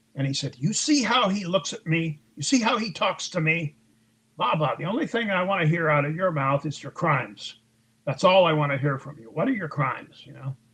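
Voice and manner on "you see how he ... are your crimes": put-on explosive angry tirade, higher pitch. Retelling how a superior exploded at the speaker: imitating an explosive outburst. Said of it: "and then he just exploded".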